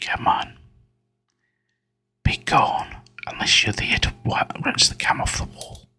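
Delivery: hushed whisper. Speaker hoping whispering will keep them from being killed: whispering. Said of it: "I'm just gonna keep whispering".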